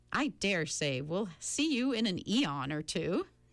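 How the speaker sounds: plain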